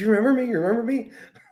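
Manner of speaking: mock overeager, very high, excitable gushing. Retelling own words on running into someone: imitating own excitable self. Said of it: "I thought I was too excitable".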